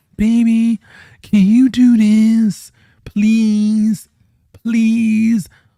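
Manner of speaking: high-pitched, slow, womanish pleading tone. Mocking a nice guy who sounds like a woman, imitating a man without bass. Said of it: "He sounds like a woman when he talks".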